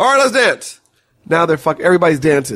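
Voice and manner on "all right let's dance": short, clipped, punchy sound-bite delivery, pitched up. Retelling the president asking for help moving a table: imitating the president's sound-bite talk. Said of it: "He talks in sound bites".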